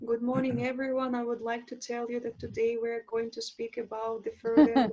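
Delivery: flat, monotonous delivery with no vocal variety. A speaker on presenting demonstrates the mistake of no vocal variance: monotonous delivery. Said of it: "We call it monotonous speech".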